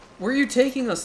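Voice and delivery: loud, high-pitched excited screams. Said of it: "I'm sorry for screaming".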